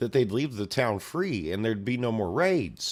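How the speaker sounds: ordinary delivery, nothing marked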